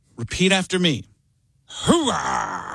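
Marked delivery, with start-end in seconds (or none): 1.7-2.8 deep, gravelly voice ground from the throat. Teaching a class to repeat after him: Al Pacino voice, deep and gravelly. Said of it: "the voice is deep and gravelly in the back of your throat. You are Al Pacino".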